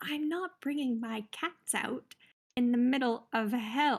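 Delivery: speaking in a whisper. Refusing to bring out the cats in the middle of hell: whispering. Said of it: "I'm also whispering now".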